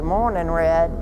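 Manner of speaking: usual speaking voice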